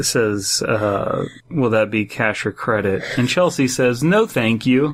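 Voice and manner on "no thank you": mock, very confident tone. Retelling Chelsea's answer to a man asking cash or credit, imitating a confident reply. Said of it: "Very confidently".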